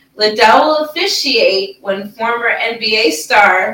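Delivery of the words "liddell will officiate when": usual speaking voice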